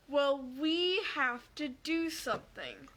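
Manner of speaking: very slow, deliberate, drawn-out speech. Quoting a man's reply after being told what happened: very slow. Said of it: "in a very slow voice".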